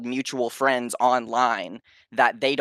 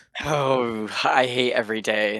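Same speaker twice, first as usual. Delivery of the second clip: put-on goth voice, mock gloomy. Greeting the hosts after being called on as Gothfield: put-on goth voice. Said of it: "You sound goth".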